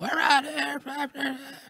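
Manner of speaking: mock very high, full-throated scream. Retelling how interviews sound in an open arena: imitating own screaming into microphone. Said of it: "like I'm screaming into it".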